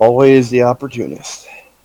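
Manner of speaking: muttered aside, grumbling, meant to be heard. Voicing a character reacting to a companion searching: muttering under breath. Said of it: "Muttering in Orcish under my breath, but it's audible".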